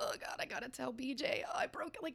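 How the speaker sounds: high, frantic whisper full of dread.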